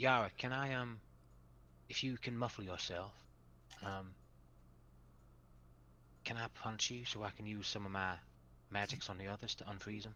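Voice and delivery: quiet, soft, halting whisper. A character whispers a request to yara during the scene, whispering. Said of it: "I'm whispering".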